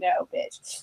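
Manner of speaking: mock cheeky, sassy, breathy whisper. Acting out a TV character's line from a teaser: sassy Magnus voice. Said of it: "but I'm gonna sass you first".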